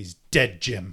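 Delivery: mock-aggressive delivery. Repeating how the other person just said it, mock-aggressive repeat. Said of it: "You said that so aggressively".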